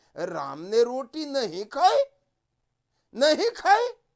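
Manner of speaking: astonished tone, stress on नहीं and खाई. Example sentence in a lesson on exclamation marks: surprised, stressing नहीं and खाई. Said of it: "आश्चर्य व्यक्त करेगा ... नहीं और खाई दोनों शब्द पर जोर पड़ रहा है".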